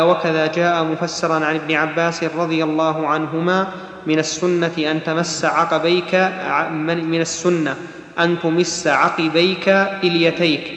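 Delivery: ordinary delivery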